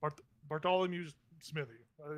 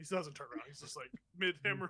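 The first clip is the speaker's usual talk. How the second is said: ordinary delivery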